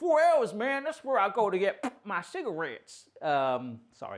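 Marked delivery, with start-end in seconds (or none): 0.0-3.1 put-on American accent, higher pitch. Saying how an American would react to a four-hour drive: imitating an American. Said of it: "that's my best impression".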